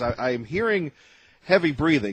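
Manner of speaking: plain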